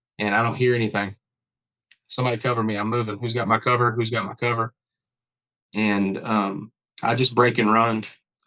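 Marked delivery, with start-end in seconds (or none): none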